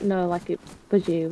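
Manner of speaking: plain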